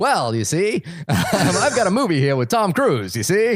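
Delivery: put-on old-time movie mobster voice. Co-host playing Mister Studio Man answers the other host, in a stereotypical 1940s gangster voice. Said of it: "like a really stereotypical nineteen forties gangster".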